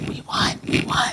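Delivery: soft, hushed, breathy whisper.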